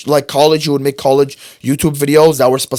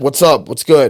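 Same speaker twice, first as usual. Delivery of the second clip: plain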